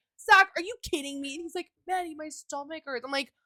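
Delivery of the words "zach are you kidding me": put-on angry, pissed-off tone. Retelling when Zach was unwell at night, acting out an angry outburst at him. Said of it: "I'm just getting so pissed at him".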